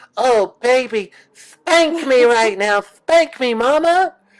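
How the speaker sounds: put-on very high baby voice, pitched way up. Speaker pictures going back into that voice, crawling with a pacifier: Diaper Dave baby voice. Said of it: "going back into that voice".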